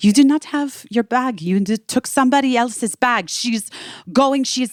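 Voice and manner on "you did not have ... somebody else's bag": put-on French accent with raised pitch. Retelling a phone call from a woman, in a french accent. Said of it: "a woman with a French accent".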